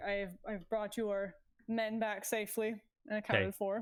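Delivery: plain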